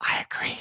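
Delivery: hushed, barely-there, very quiet whisper. Agreeing about a defensive matchup, whispered very quietly. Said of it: "I'm gonna whisper this really, really, really quietly".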